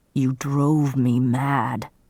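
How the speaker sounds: slow, drawn-out growl through the words. Narrator voices a half-wild man speaking to her, growling. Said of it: "he growled".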